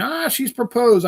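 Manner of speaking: put-on very high squealing scream. Retelling own reaction to hearing of the proposal: imitating own screaming. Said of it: "So then I was screaming".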